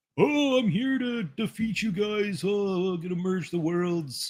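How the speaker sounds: very high-pitched villain voice, announcer-like. Retelling a game scene, the speaker quotes the villain: Shao Kahn impression. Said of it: "That's a good impersonation".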